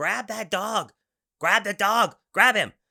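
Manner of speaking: very high-pitched, very loud shouting. Telling a story, speaker re-enacts yelling at the garbage man, retelling a yell. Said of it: "I'm trying to yell at the garbage man".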